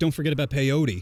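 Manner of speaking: usual speaking voice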